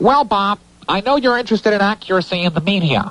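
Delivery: very high, pinched-nose nasal voice. Retelling a phone call from a caller, pinching the nose: nasal voice imitating Richard Shanks. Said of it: "I have to get into character for this".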